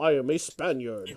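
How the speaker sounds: put-on Scottish accent. Quoting an actor's line from a film: Sean Connery impression. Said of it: "Sean Connery in in Highlander".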